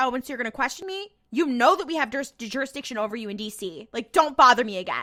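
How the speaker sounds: pissed-off, irritated, dismissive and curt tone. Retelling a character's phone call, imitating someone pissed off. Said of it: "fucking pissed on the phone".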